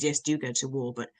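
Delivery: ordinary delivery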